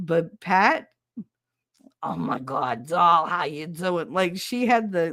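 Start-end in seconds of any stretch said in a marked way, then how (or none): 2.0-4.1 put-on raspy old New Jersey lady, touch of Brooklyn accent. Imitating an older lady who had some Brooklyn in her accent: Brooklyn-tinged accent. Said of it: "she had a little bit Brooklyn in her".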